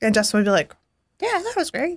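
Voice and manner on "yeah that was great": squeaky, very high put-on character voice. Imitating Justin answering a question about last week's sound: Justin impression. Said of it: "That's my Justin impression".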